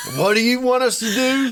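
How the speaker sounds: high-pitched, puzzled cow voice. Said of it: "they're looking at me like".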